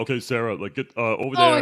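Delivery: loud swooping call. Acting out directions given on set: David Robert Mitchell impression. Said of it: "I like your impression of David Robert Mitchell".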